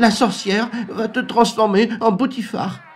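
very high, frightened, whimpering hen's whine. Storyteller voicing the frightened hen pleading with another character, whimpering frightened hen. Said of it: "tous les membres des échoppes catalanes et des régions invitées entourent la poule qui enchaîne en pleurnichant".

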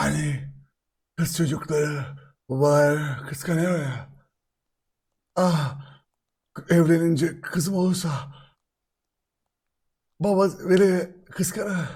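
low, breathy, seductive put-on sexy voice. Imitating someone from a TikTok trend: imitating a sexy voice. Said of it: "O daha bir seksi yapıyordu".

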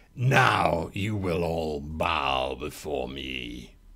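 very deep, soft, hushed, very strange villain voice. As the blades wind down, the storyteller gives Lord Gash's line: Lord Gash's very weird voice. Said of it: "Lord Gash says in that very weird voice of his".

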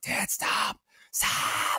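fierce, urgent shout kept to a whisper. Retelling a moment in a theater with their dad, whisper-scream. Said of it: "I'm like whispers screaming at him".

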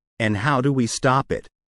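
usual speaking voice

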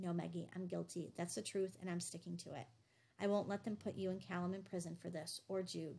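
usual speaking voice

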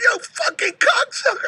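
put-on tearful crying, very high-pitched. Retelling falling over a bench and cursing: reenacting a tearful curse. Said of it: "And I was crying".

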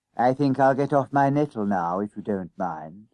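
ordinary delivery

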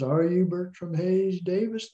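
put-on high, sweet, honeyed Southern belle accent. Recounting a phone call from Cameron Napier, imitating her kind of Southern voice. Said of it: "her voice is kind of Southern".

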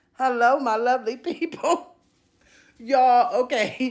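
slow, giggling, laughing through the words. Greeting viewers at the start of a video, laughing while talking. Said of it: "let me stop laughing".

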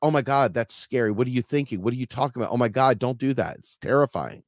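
ordinary talk, nothing marked

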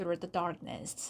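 ordinary delivery, nothing marked

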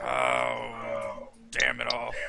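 very low, loud, growled grumble. Narrating the scene, voicing the big one's reply, growling. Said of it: "the big one just growls and says".

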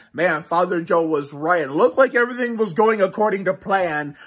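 normal talking voice

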